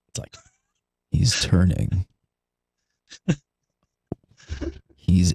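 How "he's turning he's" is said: hushed, quiet, lower golf commentator voice. Imagining tank esports commentary done like golf: quiet golf commentator voice. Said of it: "the best way to do it is do it like golf".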